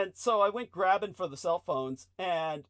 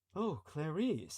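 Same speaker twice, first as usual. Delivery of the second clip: creepy villain impression, much quieter; 3 semitones lower, 10 dB quieter than usual. Greeting Clarice on a call that two others overhear, in a Hannibal Lecter voice. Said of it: "like Hannibal Lecter talking".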